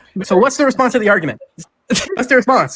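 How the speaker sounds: very high, shrill, swooping shouting. Pressing a debate opponent for a response to the argument: yelling. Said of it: "you've been yelling at me this entire time".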